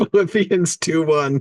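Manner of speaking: laughing while talking. Reading out a Bible verse reference, laughing while talking. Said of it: "Sorry, I'm laughing".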